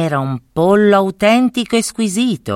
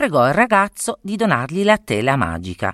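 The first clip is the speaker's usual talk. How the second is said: plain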